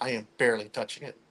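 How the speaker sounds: hushed whisper. Touching a moving board with others, insisting on barely touching it: whispering. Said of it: "You're whispering".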